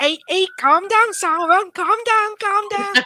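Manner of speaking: put-on rough Liverpool accent. Discussing a show, imagining what a Liverpudlian would say, in a Liverpool accent. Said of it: "I don't know if I can do the accent properly".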